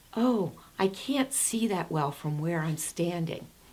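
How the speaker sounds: acted-out anxious, uneasy, nervous voice. Recalling answering a director during a hard moment: retelling a nervous reply. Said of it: "And I said nervously".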